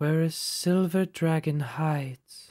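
gently, very softly spoken voice. A game master voices the reply to a commune spell, very soft voice. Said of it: "So you get back a very soft voice".

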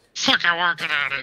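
high put-on grumpy voice.

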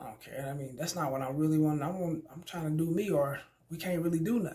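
nonchalant, casual tone.

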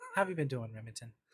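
soft, hushed, gentle radio-host voice. Checking in with someone on a show, soft radio voice. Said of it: "why are we doing the soft voices? / I'm working on my radio voice".

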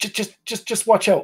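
hushed, whispered voice. Warning the others in character during a fight: whispering.

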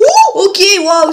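screaming. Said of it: "sorry for screaming".

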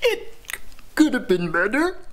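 play-acted high, tearful crying, words squeezed out. Speaker reenacts answering a caller checking in on progress, imitating own crying. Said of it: "Are you crying?".

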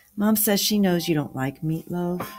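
ordinary delivery, nothing marked

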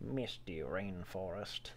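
hushed, murmured, soft, low commercial voiceover. Two streamers chatting during a game: Pepperidge Farm voice. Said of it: "That was a good Pepperidge Farm voice".

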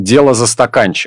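ordinary talk

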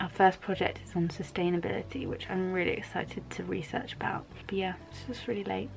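soft, hushed late-night whisper.

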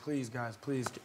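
acted pleading tone. An actor retells begging to be cast in a movie, retelling begging. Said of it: "I was begging".

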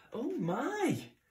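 very high exclaiming cry. Mouse hears a strange rumble under the floor, crying out. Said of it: "cried Mouse".

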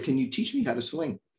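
plain

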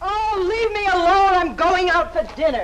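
very high, cross, annoyed, angry outburst. In a drama, pestered by someone pleading with them, the character answers angry. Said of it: "Kitty, don't be angry".

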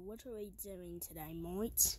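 very low, deep, soft put-on Australian accent. A character in a video speaks to the group in a put-on Australian accent. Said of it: "can you stop using that that Australian accent?".

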